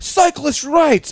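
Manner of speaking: very high, furious, angry yell. Retelling a skit's angry bike courier: imitating an angry courier yelling. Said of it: "he's just yelling, like".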